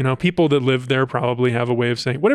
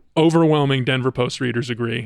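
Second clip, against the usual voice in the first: ordinary talk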